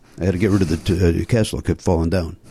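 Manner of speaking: low, fast mumble, rattled off quickly. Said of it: "That's what he says".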